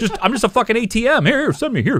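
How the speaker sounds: squeaky, very high cartoon dinosaur voice, pitched way up. Joking around during the picks until someone asks where the voice came from, in a Barney voice. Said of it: "Where'd that voice come from?".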